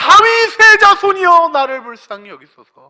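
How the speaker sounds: crying out loudly. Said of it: "더 크게 소리를 질렀어요".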